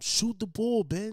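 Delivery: shrill screaming. Speaker retells a player yelling at a teammate who passed the ball; retelling a scream. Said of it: "Kyrie literally screamed at him".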